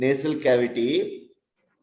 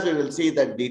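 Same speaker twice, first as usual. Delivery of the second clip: usual speaking voice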